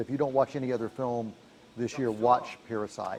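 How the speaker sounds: ordinary talk, nothing marked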